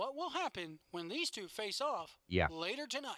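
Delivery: radio announcer voice, read like a promo. Showing how a commentator speaks in sound bites: Otunga radio voice. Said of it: "he speaks like this".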